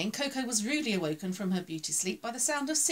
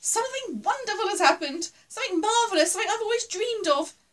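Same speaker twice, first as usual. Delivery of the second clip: very high, loud squeaky voice; 10 semitones higher, 6 dB louder than usual. Fuzzy, dancing a little jig to the music, tells Coco his news, squeaking. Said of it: "Fuzzy squeaked".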